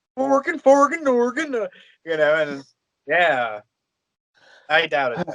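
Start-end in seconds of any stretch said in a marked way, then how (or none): 0.2-1.6 babbled out in a very high voice. Retelling how a man suddenly sounded: Swedish Chef impression. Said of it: "all of a sudden he sounds like this Swedish chef".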